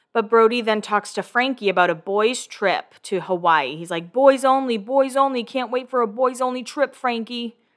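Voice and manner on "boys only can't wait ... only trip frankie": weird put-on New York accent. Recapping a show, quoting Brody talking to Frankie, Brody's weird New York accent. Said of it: "he has like kind of a weird New York accent".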